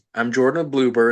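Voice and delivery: ordinary talk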